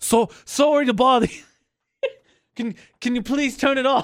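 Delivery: polite put-on British accent. Acting out a polite man asking someone to turn it off, in a British accent. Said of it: "I don't know why I'm in a British accent".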